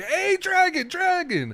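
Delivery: very high, hawking, attention-grabbing call-out. Voicing a stall vendor slapping the stand: calling out to the dragon. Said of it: "slaps the top of".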